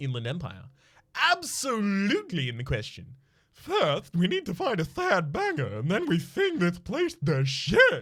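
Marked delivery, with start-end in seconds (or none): 1.3-8.0 high-pitched, full-on fantastical voice. Voicing the Inland Empire skill's reply: fantastical Ed Wynn-like voice. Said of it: "the most fantastical voice that I have in my repertoire".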